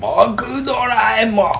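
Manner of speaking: very high-pitched cartoonish voice. Answering a request for an impression, doing a Doraemon voice impression. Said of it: "[name]のものまねでお願いします".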